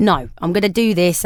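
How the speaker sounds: ordinary talk, nothing marked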